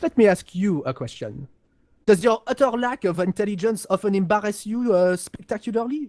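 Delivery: put-on French accent on English speech. Voicing a Cassian character in a game conversation, in a French accent. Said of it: "the French accent's about the only one I can do".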